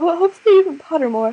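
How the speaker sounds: words pushed through a yawn. Tired after playing all night, talking about putting a video out, yawning while talking. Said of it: "Sorry, I'm yawning".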